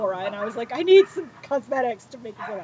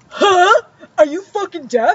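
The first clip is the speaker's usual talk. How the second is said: mocking, high, loud yell, words dragged out; 8 semitones higher, 8 dB louder than usual. Retelling a woman who yelled at the speaker about filming, retelling her yell. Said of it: "Then I realize she's yelling at me".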